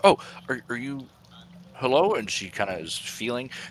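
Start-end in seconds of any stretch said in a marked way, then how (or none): 0.0-2.1 shocked, startled, high-pitched stumbling stammer. Voicing a crawling woman in a dark cave who hears a voice: shocked, startled voice. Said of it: "she gets kinda shocked by hearing a voice".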